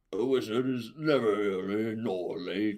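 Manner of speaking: very slow, grand wizard voice. Retelling what a man in line answered him: Ian McKellen wizard voice. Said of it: "does a fucking voice".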